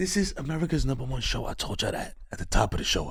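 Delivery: soft, hushed whisper under the breath. Switching to a new part of the show, whispering. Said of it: "I don't know why I'm whispering".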